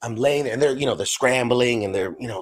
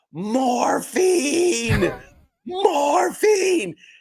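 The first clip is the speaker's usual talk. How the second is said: put-on screaming, very high pitched. Speaker retells screaming at the guy working to save their life, retelling a scream. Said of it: "I'm screaming at him".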